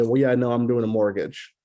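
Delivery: put-on dismissive voice. Acting out a buyer answering a sales question: imitating a dismissive client. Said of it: "the way they're gonna say that ... dismissive".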